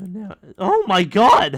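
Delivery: voice breaking, very loud and high. Speaker exclaims in the middle of a task, voice cracking. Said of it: "That voice crack".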